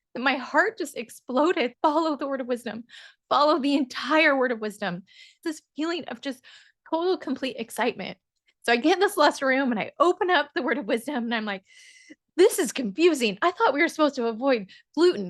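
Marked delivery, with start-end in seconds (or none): 0.2-8.2 deeply moved, overflowing emotional delivery. Recounting praying at the temple, the speaker apologizes and gets emotional. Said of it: "let me get emotional".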